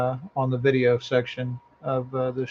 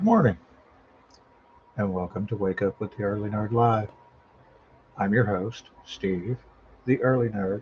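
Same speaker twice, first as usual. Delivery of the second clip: quiet, hushed voice, lower pitch; 4 semitones lower than usual. Opening an early-morning live show without waking the household; talking quietly. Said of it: "I'm talking quietly".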